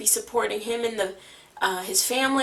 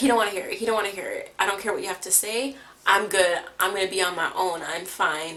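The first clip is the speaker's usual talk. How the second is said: acted, dismissive, defensive, brushing-off rant; 3 semitones lower than usual. Retelling how Andre talks when he gets defensive: imitating Andre getting defensive. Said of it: "when he gets defensive".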